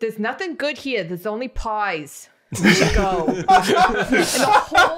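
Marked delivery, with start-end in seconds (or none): 0.0-3.3 put-on New York Long Island accent. Telling a story about a pie line, the speaker quotes a girl in the thickest Long Island accent. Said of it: "she has the thickest Long Island accent".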